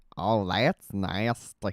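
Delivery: odd, not-quite-right cartoon voice. Trying out voice impressions, doing a Cleveland voice. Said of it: "even the Cleveland's kind of weird".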